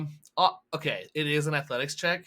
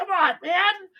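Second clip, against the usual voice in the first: high, loud, exasperated, fed-up cry. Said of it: "he's just like".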